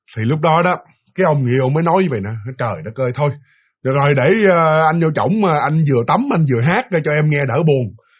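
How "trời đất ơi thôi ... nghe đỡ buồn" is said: ordinary delivery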